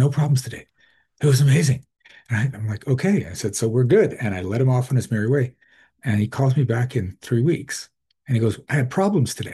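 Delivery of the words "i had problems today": mock-happy tone, higher pitch. Retelling what a caller said when he phoned back three weeks later: imitating someone sounding happy. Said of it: "why do you sound happy about that?".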